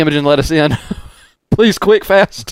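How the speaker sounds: loud yelling call. Locked out with the ramp up, yelling out to be let in. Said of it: "I'm just gonna yell out".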